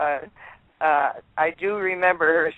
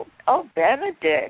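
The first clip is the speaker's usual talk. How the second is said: put-on childlike voice, pitched higher; 8 semitones higher than usual. Retelling what Elizabeth Taylor said on first meeting: Elizabeth Taylor's childlike voice. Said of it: "she always had that childlike voice".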